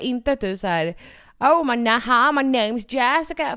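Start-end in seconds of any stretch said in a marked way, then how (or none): 1.4-3.6 slow, playful, jokey fake English accent. Imitating the other speaker's jokey english: imitating put-on jokey english. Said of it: "gör det på ett skämtsamt sätt".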